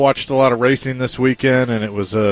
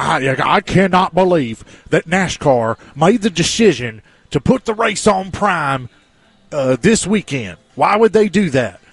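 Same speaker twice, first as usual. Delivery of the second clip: put-on, high, slow, angry southern drawl; 5 semitones higher than usual. Mocking people complaining on Twitter; mock-angry southern accent. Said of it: "It's like my angry southerner".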